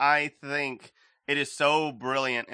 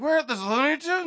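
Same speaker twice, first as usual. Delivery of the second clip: put-on drunk voice, higher pitch; 14 semitones higher than usual. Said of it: "drunk the whole time".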